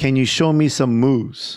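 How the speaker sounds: ordinary talk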